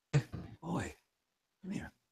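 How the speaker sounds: soft, high, hushed, barely audible half-whisper. Playing a character calling someone over: half-whispering in character. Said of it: "whisper out to him".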